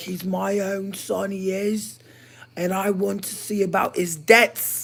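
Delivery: put-on British accent, high and slow. Retelling pretending to be British under a fake name, fake British accent. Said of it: "I was like using a British accent".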